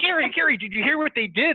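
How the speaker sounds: put-on very high, eager, excited screaming. Retelling someone calling out from across a subway train: imitating someone screaming. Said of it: "she's screaming across the car".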